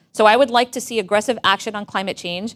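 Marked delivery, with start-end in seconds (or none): none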